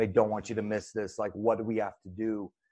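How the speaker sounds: put-on tearful crying voice. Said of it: "And she's crying".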